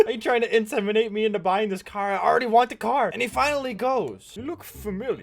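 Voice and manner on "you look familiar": soft, clumsy, failed attempt at a Russian accent. Retelling what a car salesman finally said to him, in a bad Russian accent. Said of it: "That was the worst Russian accent attempt".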